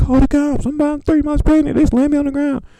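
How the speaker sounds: very high, desperate, pleading scream. Retelling a video of an arrested pregnant woman: imitating someone screaming. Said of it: "and she all screaming".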